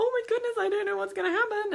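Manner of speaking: very high, rushed, frantic, panicky babble. Explaining how dog owners shouldn't sound when out with their dogs, mock panicking. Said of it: "and panicking and generally being a bit stressed".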